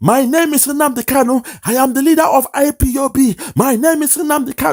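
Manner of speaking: very high, booming, thunderous shout. Retelling a commotion at an airport, the speaker acts out: retelling Nnamdi Kanu's thunderous shout. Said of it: "shouting in a thunderous voice".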